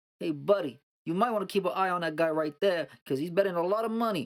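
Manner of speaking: put-on Jersey accent. Retelling a warning from the coworker who pays out jackpots, in a New Jersey accent. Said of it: "in his Jersey accent".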